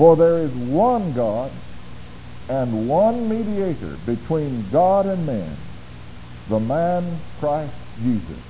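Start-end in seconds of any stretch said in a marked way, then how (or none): 0.0-5.5 emphasis landing on the word one. Rereading a scripture verse with emphasis: stress on one. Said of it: "let me read it again with that emphasis".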